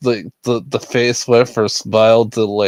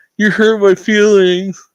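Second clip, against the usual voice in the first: very high, tearful blubbering crying voice; 10 semitones higher, 4 dB louder than usual. Retelling a livestream moment: imitating Boogie crying. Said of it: "crying like a little bitch on live T V".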